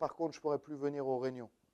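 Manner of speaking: put-on mock whisper. Speaker acts out what a man slips in at the end, retelling a whispered aside. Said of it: "en chuchotant".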